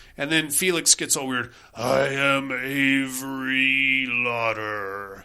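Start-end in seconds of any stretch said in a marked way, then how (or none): 1.8-5.3 very slow, ghostly possessed voice. Retelling a movie scene where a medium is possessed: possessed ghost voice. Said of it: "his voice sounded so much better doing that voice".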